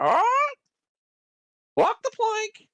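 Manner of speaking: very high, swooping, squawky bird voice. Speaker retells how a friend would bust out his bird impression: squawky bird impression. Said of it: "bust out his bird impression".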